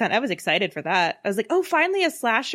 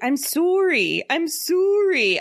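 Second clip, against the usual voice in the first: very slow, high, put-on Canadian accent; 8 semitones higher than usual. Imitating a movie character's line by the seaside: imitating a forced Canadian accent. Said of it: "that sounds like you're trying to sound Canadian".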